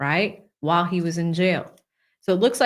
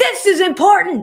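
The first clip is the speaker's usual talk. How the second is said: sudden, loud, shrill scream; 12 semitones higher, 8 dB louder than usual. Retelling how a law professor would scream mid-lecture: imitating a professor screaming. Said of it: "start screaming at you like".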